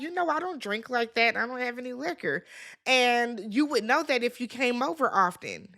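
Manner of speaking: usual speaking voice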